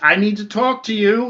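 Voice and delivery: acted-out yelling. Narrating a scene where a character yells at one of four people: retelling a yell. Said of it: "he's yelling at one of the four".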